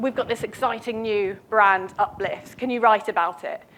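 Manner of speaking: ordinary talk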